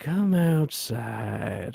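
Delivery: eerie, unsettling, chilling, low, creaky voice. Imitating how the priest character says his line: imitating a chilling line delivery. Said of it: "it's fucking chilling".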